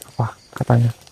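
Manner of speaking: soft, low whisper. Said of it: "nggak usah bisik-bisik".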